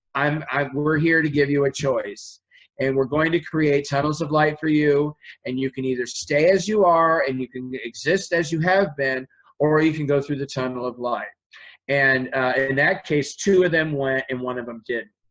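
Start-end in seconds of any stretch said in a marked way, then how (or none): none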